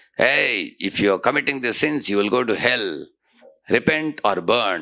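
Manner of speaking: severe, stern preacher-style delivery. Imitating people who warn sinners about hell: imitating a stern voice. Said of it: "in a stern voice".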